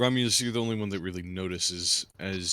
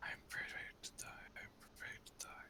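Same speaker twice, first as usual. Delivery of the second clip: muttered under the breath, much quieter. In a tabletop game standoff, a character answers, muttering under her breath. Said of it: "Under he- her breath".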